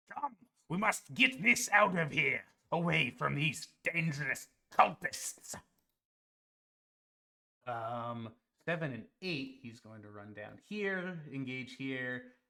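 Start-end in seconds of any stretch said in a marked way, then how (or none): 0.1-5.5 loud, acted, in-character calling out. Voicing a flying character calling to an ally: calling out in character. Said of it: "he calls out to Daquin".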